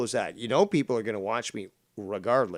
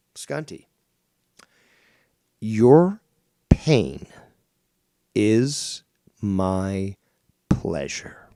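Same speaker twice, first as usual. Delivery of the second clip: unrepentant, loud, halting, deliberately clear and broken up; 6 dB louder than usual. Addressing skunty so everyone can hear, the speaker says it clearly. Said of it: "say it once more and say it clearly".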